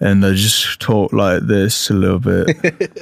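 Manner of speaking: British accent, dropped low in pitch. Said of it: "I fall into Jack Sparrow / [name]".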